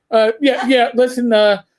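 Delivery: ordinary talk, nothing marked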